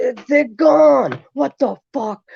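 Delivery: put-on angry yelling. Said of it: "I started yelling, screaming at him".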